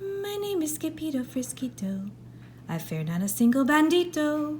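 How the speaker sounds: timid, hushed, very soft, high little voice. Narrator reads a sword fighter's words facing a bandit, in a very soft voice. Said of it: "muy soft voice he said".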